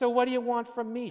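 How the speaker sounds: nasty, shrill, very high and very loud sneering. A woman's friend answers her birthday news, sneering. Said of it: "she sneered".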